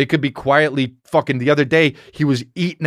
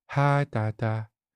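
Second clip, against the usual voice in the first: quiet, soft-spoken, murmured little voice; 3 semitones lower, 8 dB quieter than usual. Recalling his son suddenly in his face at 3 a.m., imitating Calvin's quiet voice. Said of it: "he quietly says".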